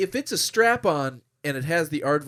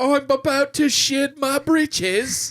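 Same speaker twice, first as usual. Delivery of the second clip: very high, shrill, put-on bad British accent; 12 semitones higher, 5 dB louder than usual. Picturing a woman in an imagined scene, bad british accent. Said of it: "does not have a good British accent".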